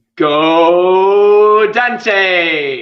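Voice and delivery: loud, keen, enthusiastic rallying cheer, "go" drawn out. Asked to do the call one more time, more enthusiastic. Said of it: "a bit more enthusiasm".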